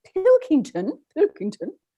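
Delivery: put-on British accent, lilting. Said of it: "I have to say it with my Eng-, my British accent".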